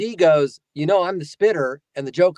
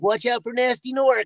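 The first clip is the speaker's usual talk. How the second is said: pitched-up cartoon dragon voice; 8 semitones higher than usual. Quoting a line from the game, in Spyro the Dragon voice. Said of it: "But I was the original Spyro".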